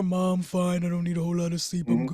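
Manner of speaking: put-on deep bass voice, dismissive teenage tone. Imitating a teenage son brushing off sleep: imitating teen son's put-on deep voice. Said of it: "pretends he's got bass in his voice".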